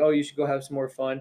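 normal talking voice

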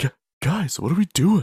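odd, halting mumble, pitched a touch high. Mocking an actor's weird, flat delivery in a movie: imitating Mark Wahlberg's weird delivery. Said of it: "some of his weird delivery that he had".

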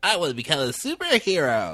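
put-on high, swooping geeky voice. Retelling a comic where a teen wants to become a superhero: put-on geeky voice. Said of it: "very geekily".

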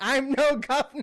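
piercing shriek, very high and loud. Retelling a cartoon chase scene, imitating Rigby screaming. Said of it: "Rigby screams out".

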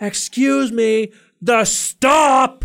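very high-pitched, stretched-out, drawn-out shout. Retelling a bus passenger shouting to be let off: imitating a lady shouting. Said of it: "she started shouting more and more".

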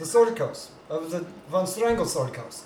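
hard, tough German accent, put-on. A player voicing his character answers where he is from, in a hard German accent. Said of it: "He's supposed to be hard. German accent".

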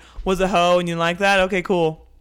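loud, blunt interviewer-style impression voice.

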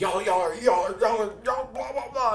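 high mocking voice. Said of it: "She's like".

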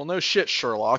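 ordinary delivery

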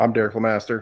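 very fast, rushed, rattled-off delivery. Introducing themselves at the start of a podcast, a co-host says it very fast. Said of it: "look how fast he did it".

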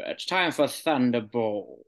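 voice talking around a pipe stem. Showing how to say the word: as if a pipe is in the mouth. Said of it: "say it like you've got a, you've got a pipe in your mouth".

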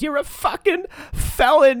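put-on very high, loud, drawn-out Boston accent. Retelling what mom said the morning after the arrest: imitating a Boston mom. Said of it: "just classic Boston mom, just goes".

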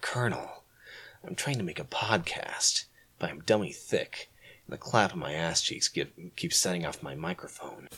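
breathy, very quiet whisper, hardly any voice. Asked on a podcast whether you have done it yet, launch into your Solid Snake impression. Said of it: "Have you done your Solid Snake impression".

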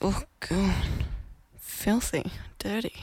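soft, trailing, grossed-out disgusted mutter.

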